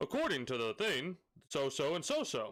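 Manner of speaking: put-on, swooping, mini announcer voice. Looking up information on Wikipedia: little announcer voice. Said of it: "a little announcer voice".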